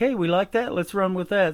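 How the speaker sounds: ordinary talk, nothing marked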